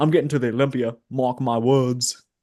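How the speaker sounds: put-on British accent. Quoting a screen-recorded boast, as James Hollingshead in a British accent. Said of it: "British accent".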